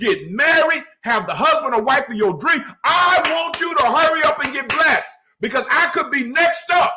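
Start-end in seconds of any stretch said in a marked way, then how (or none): 2.8-6.9 all-out, loud yelling and screaming. Speaker addressing the thirty people watching live, yelling and screaming. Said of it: "I know I'm yelling and screaming".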